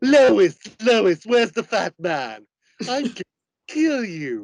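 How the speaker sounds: high, loud, swooping cartoon character voice. Asked to do impressions from Family Guy, the speaker answers with a Family Guy character impression. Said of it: "do any impressions from Family Guy?".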